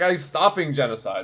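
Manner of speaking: plain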